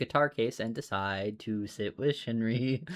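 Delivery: ordinary delivery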